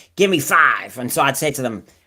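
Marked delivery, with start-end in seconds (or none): 0.2-1.0 thick, loud, put-on very American accent. Retelling what they said to pupils at a school, in a very American accent. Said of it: "I went very American".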